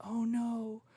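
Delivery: hushed mutter under the breath. Retelling a reaction to a new player joining: imitating a half-whisper under the breath. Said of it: "I whispered under my breath in my mic".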